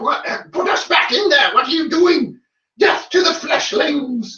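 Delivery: very high, squeaky, spooky skeleton chatter. Describing a dice roll, voicing two skeletons on the wagon, skeleton voice. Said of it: "Complete with voice acting".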